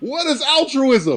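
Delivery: very high shrieked scream. Retelling a funny moment from a series: imitating Donald Logue screaming. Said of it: "Donald Logue screaming".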